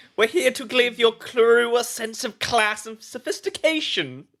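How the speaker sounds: high, mincing, foppish dandy voice. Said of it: "Mincing up to town".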